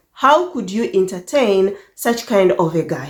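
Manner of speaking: plain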